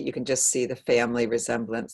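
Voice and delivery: ordinary delivery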